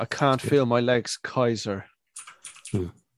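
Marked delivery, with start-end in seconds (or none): 0.0-1.8 slow put-on voice, every word drawn out. Chatting about a film, quoting a line: Gabriel Byrne impression. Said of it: "That was a good impression of Gabriel Byrne".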